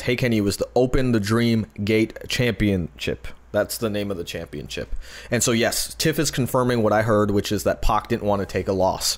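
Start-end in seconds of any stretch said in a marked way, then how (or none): none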